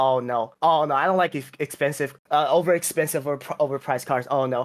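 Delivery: ordinary talk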